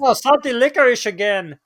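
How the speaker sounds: bad, put-on Swedish accent, very high-pitched. Joking about a let-down Swedish child: terrible Swedish accent. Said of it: "terrible Swedish accent".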